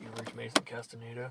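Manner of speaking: drowsy half-asleep mumble, very low, soft and hushed. Showing someone how their "you reached" message sounded, imitating someone half asleep. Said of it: "It sounded like you were half asleep".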